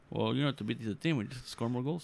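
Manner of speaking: Portuguese-accented speech.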